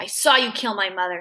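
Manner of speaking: plain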